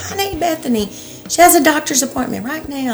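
acted, very high, screaming holler. Retelling screaming and hollering at the teachers: retelling screaming and hollering. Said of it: "screaming and hollering at the teachers".

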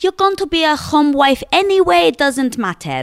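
put-on heavy, thick Greek accent, very high-pitched. Woman retelling what her dad said about her studies, in his thick Greek accent. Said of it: "in his big, thick Greek accent turned around to me and said".

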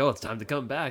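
normal talking voice

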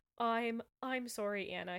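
ordinary delivery

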